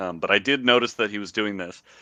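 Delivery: ordinary talk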